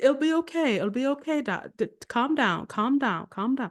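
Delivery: bad put-on British accent. Retelling what a woman said to the speaker: horrible, bad British accent. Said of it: "this is my horrible, bad British accent".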